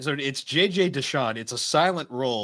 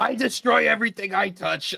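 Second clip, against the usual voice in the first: put-on angry voice, high and rasping; 8 semitones higher, 3 dB louder than usual. Recapping a story, quoting a girl character's line in a mock-angry voice. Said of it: "I gave her this angry voice".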